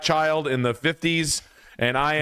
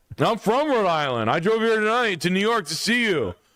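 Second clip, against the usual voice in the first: high, incredulous male outburst in total disbelief; 9 semitones higher than usual. Acting out a man who drove in to see the show, impression of a guy from last night. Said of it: "my impression of a guy last night".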